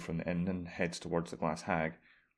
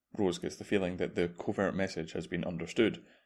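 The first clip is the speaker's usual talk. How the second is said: plain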